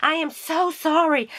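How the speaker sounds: high, gasping, shocked blurted delivery.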